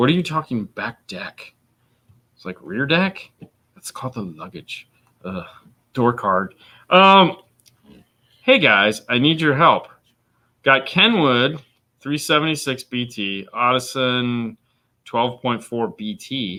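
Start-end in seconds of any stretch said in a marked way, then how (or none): 0.0-4.9 haughty, snooty, posh put-on British accent. The speaker imitates a guy's reply in a snooty British accent. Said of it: "the guy's like with a snooty British accent".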